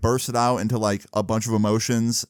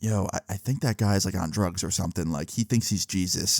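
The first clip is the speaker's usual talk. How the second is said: hushed half-whisper, breathed close; 3 semitones lower, 5 dB quieter than usual. Retelling a friend's remark while walking away, imitating a friend half-whispering. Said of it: "Tyler whispers in my ear".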